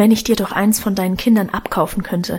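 ordinary delivery

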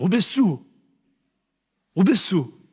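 angry, accusing tone.

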